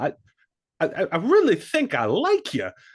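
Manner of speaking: stuttering, stop-start, very high voice with wildly swooping pitch. Imagining a contrast of accents opposite Leia, do a Christopher Walken impression. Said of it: "Just Christopher Walken".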